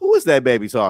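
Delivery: sweet, sugary voice. Retelling a remark about a young wrestler: imitating someone saying it sweetly. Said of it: "she said it so sweetly".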